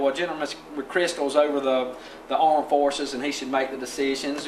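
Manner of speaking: normal talking voice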